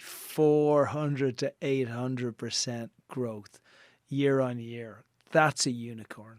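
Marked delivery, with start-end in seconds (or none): 0.0-5.0 slow, deliberate emphasis, each word laid out carefully. Repeating the growth figure just given: said slowly. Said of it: "I'll say that slowly".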